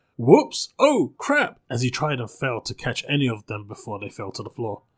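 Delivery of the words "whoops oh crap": very high, very loud, shrill horrified yelps. Amal sends bottles clattering and fails to catch them, horrified. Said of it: "a string of horrified".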